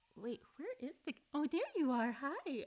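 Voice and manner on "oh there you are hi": high-pitched voice, much higher. Finding the kitten hiding behind the computer screen, high-pitched voice for the kitten. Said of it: "the high-pitched voice that she knows is for her".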